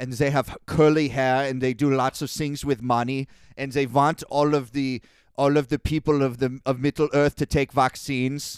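put-on out-of-practice Scandinavian accent. Retelling how a man described a race of villains, in a rusty Scandinavian accent. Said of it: "My Scandinavian accent is like a little bit out of practice".

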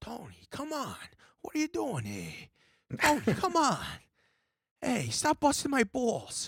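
very high, animated, swooping mobster voice. Explaining how a Sopranos character does not sound, in a Sopranos character voice. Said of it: "tried to do a ton of different Sopranos characters".

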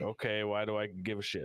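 normal talking voice

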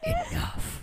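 stage whisper pitched way up, single word. Retelling how a man silenced a stranger in the crowd: imitating a whisper. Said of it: "comes up and whispers".

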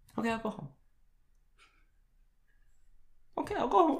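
very high, soft, tearful voice close to tears. Told they're drunk and to go home, agreeing to leave: on the verge of crying. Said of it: "Don't cry".

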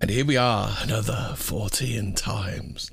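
eerie, spooky put-on voice. Greeting the others as the recording begins: spooky voice. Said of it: "Do you like my spooky voice".

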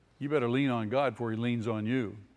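ordinary talk

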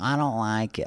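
whiny voice. Told to drink water, refusing because of the taste: whiny voice. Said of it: "I like your whiny voice".

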